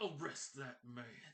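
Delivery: words pushed out through tightly clenched teeth. As the crowd gasps, the Burgermeister orders an arrest, through clenched teeth. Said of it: "you hear through clenched teeth".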